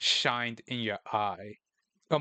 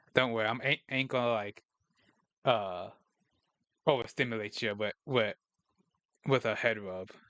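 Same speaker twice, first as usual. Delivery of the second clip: normal talking voice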